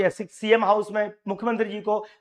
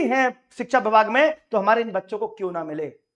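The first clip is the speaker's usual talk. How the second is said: normal talking voice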